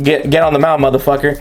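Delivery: plain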